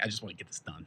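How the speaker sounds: nervous soft voice.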